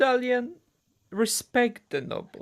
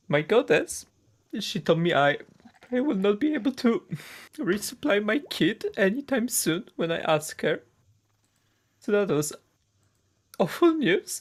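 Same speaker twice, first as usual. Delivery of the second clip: pitched-up, emotional delivery; 5 semitones higher than usual. A character tells Gil about bad news from the monolith, getting emotional. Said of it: "I'm getting emotional here".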